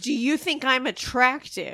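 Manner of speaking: put-on emphatic, point-blank, forward and direct tone. Retelling what a character first asked, imitating it said loudly. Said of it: "Really loud".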